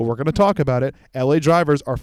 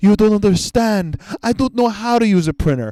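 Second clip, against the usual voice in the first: vaguely Eastern European put-on accent; 6 semitones higher than usual. Retelling a man's reply to a woman about printing, imitating eastern european accent. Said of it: "He's like Eastern European or something".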